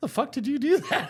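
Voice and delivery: very high-pitched speech full of laughter. Retelling how Ashley reacted after he leapt out of bed: imitating Ashley laughing while talking. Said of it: "laughing at me".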